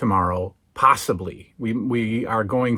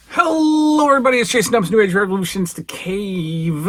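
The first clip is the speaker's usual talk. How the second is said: talking through a full mouth, pitched high; 9 semitones higher, 3 dB louder than usual. Opening the show, talking with peanuts in mouth. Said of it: "I've got peanuts in my mouth".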